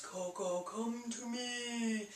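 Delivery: soft, very slow, ghostly spooky calling voice. Explaining a spelling memory trick, giving an example call, spooky voice. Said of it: "maybe spooky voice".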